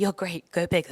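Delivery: imitated whispering voice. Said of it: "Alona whispered".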